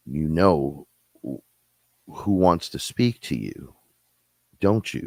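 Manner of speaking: monstrous demon voice. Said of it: "And he talked like this".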